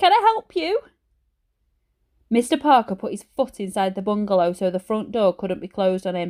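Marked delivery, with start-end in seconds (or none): 0.0-0.8 squeaky, very high voice. Narrating a story, the reader voices Ben answering the door in a squeaky high voice. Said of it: "said Ben in a squeaky high voice".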